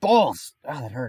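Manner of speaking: sudden pained yelp outburst. Mid-story, speaker's scalp suddenly hurts; sudden pain outburst. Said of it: "my scalp psoriasis just really hurt me".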